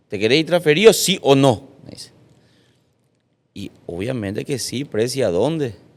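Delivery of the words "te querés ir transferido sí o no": aggressive, very angry, loud and pitched-up voice. Retelling what the club president said to him, doing a mock-angry demand. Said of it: "muy enojado".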